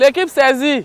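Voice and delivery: loud, high-pitched shouting.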